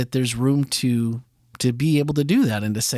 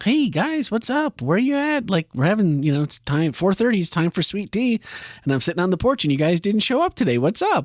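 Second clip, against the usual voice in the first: sincere, casual voice, pitched up; 6 semitones higher than usual. Retelling God asking the two in the garden questions: imitating God, sincere and casual. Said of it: "it seems very sincere, very like".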